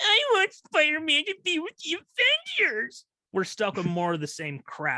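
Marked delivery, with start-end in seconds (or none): 0.0-3.0 shrill, high, whining crybaby crying moan. Mocking MCU fans who complained about the deal, mock crying and moaning. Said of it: "cried and moaned".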